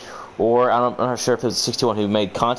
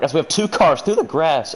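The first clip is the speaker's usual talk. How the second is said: pitched-up voice breaking mid-sentence; 6 semitones higher than usual. Calling a race as two cars go through the grass, voice cracking. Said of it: "voice crack. Apologies".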